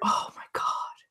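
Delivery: barely audible, very quiet whisper. Retelling what the man on the call said: imitating a whisper. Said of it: "he just whispered".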